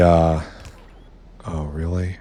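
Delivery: let down, disappointed tone. Addressing an audience during a demonstration: disappointed. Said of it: "Can you hear the disappointment in my voice?".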